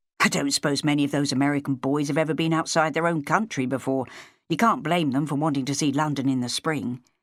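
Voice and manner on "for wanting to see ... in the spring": ordinary delivery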